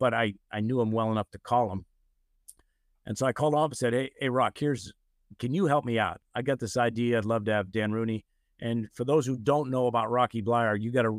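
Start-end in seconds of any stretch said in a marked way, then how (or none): none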